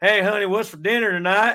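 high put-on cowboy voice. Retelling talking to his wife after too much Red Dead Redemption: cowboy voice. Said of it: "was talking to my wife like this".

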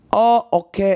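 botched put-on English accent. Retelling what a man said, the speaker attempts his accent; bad English accent. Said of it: "No, that's not English".

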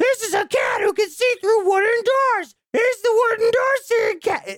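put-on very high baby voice. Describing a movie's opening scene with drawings, imitating Tom Green baby voice. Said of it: "he's talking like a baby voice".

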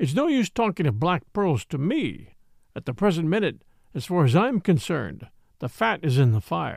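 plain

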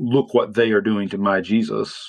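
plain

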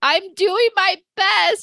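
put-on teary sobbing, very high, very slow. Retelling a hard night at home: imitating own crying. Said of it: "started crying and just being like".

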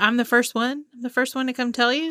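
surprised, taken-aback, disbelieving tone. Retelling how Derek reacted on coming up first: imitating surprised Derek. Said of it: "So surprised".

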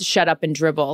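ordinary delivery

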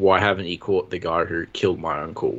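normal talking voice

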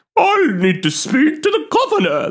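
put-on aristocratic voice, pitched high. Imagining what people from the ancient constitution of England would say, in a put-on aristocratic Karen voice. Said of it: "You sound like the aristocrat version of a modern day Karen".

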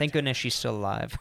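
normal talking voice

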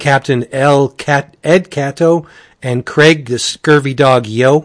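usual speaking voice

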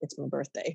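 barely voiced, very quiet and soft. Retelling what a friend said after being dropped off: imitating someone speaking quietly. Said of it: "very quietly".

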